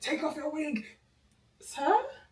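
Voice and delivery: high, outraged, furious yell at full force. Retelling how he spazzed when she went toe to toe, imitating someone shouting. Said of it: "You're shouting".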